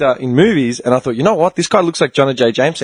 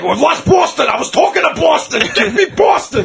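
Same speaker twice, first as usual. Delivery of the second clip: very high, rough, ranting scream; 13 semitones higher than usual. Imagining a boss yelling at the intern for coffee: imitating a boss screaming. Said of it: "imagine this guy screaming at the intern".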